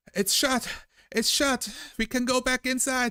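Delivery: very high, loud, carrying yell. Voicing a crew member calling out through the water: yelling. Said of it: "the Valor yelling".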